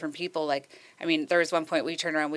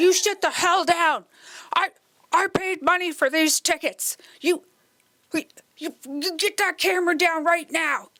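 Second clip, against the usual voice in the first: put-on furious old man yelling, very high, shrill, loud; 13 semitones higher, 6 dB louder than usual. Reenacting an older man at a show yelling at a young man: reenacting an angry old man. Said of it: "this is the reenactment of the guy".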